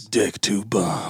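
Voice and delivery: very low, hushed, theatrical intoning voice. Asked to do the dramatic voice, the speaker says a novel's title in a dramatic voice. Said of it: "do it in dramatic voice?".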